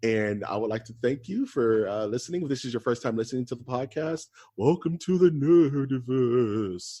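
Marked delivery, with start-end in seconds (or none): 4.6-7.0 eerie, spooky, very slow, drawn-out voice. Welcoming first-time listeners to the podcast: spooky voice. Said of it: "in my spooky voice".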